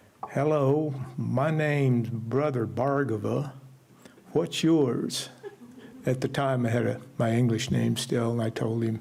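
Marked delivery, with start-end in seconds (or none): 0.3-5.3 slow, deep Southern drawl. Retelling a man introducing himself at a meal: imitating Das's Southern drawl. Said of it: "in his deep Southern drawl".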